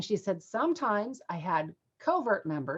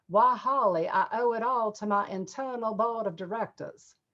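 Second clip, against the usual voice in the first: strong put-on Southern lady's accent. Quoting what a Southern woman said to the speaker, imitating a Southern accent. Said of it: "I hope I did her uh, accent justice".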